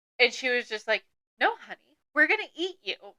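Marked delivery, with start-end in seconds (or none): 1.4-3.0 put-on eerie, pitched-up, creepy old lady voice. Retelling how they read a character's line aloud, creepy old lady voice. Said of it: "I read this in the most creepy old lady voice".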